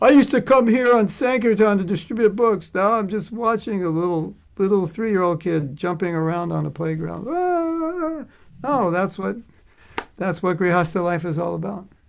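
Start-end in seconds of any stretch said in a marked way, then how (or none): 0.0-7.3 sobbing, weepy, tearful, crying while talking. Acting out a parent sitting in the park watching the kids: acting out crying while talking. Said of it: "while you're crying, saying".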